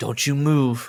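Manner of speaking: put-on whisper. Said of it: "I heard him whisper under his breath".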